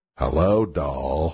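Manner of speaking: very low, deep woman's voice. Describing a woman's voice from the show, imitating her very low voice. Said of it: "It really is that low".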